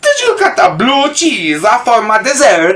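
swooping, big, sing-song cartoon Italian accent. Speaker showing off an impression of Mario: Mario voice. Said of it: "That's my impression of Mario".

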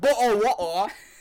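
loud, high, put-on Australian accent. Showing how an Australian accent sounds: imitating an Australian accent. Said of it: "Australian is like".

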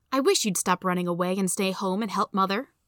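ordinary delivery

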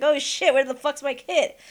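put-on frantic, panicked voice. Retelling how the other speaker called for a missing kid: imitating a panicked voice. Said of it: "I can hear you panic in that voice".

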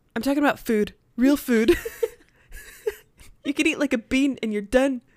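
put-on Scottish accent. Retelling a scene at the outpost as Scotty: Scotty impression with Scottish accent. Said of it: "the Scottish accent".

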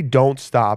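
normal talking voice

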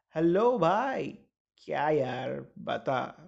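acted boozy, slurred-sounding voice. Speaker imitates how a man answers the phone when boozed: imitating a drunk man on phone. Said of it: "now I'll try to imitate him".

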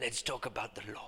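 very quiet put-on German accent. Quoting a german man's habitual line, imitating a german accent. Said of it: "Was that a good accent?".

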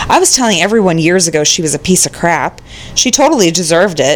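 ordinary talk

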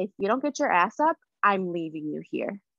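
ordinary talk

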